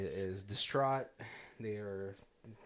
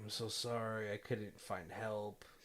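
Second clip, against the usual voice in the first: put-on tearful, crying voice, quieter; 6 dB quieter than usual. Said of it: "he's, like, crying".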